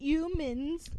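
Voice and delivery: put-on heavy New York accent, H dropped in humans. Retelling how a side teacher said a word: imitating a teacher's new york accent. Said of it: "telling us about her heavy New York accent, and she literally dropped the H".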